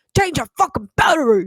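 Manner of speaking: New York or New Jersey accent. Imagining 'change your battery' said in a rough new york accent. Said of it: "some like asshole fucking New Jersey or New York accent".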